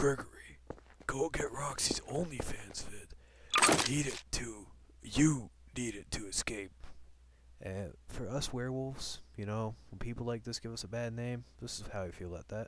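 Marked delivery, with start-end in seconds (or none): 0.0-6.7 loud, slow, drawn-out, booming animatronic bear voice. Speaker does their best Freddy Fazbear impression, addressing Gregory. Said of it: "my best Freddy Fazbear impression".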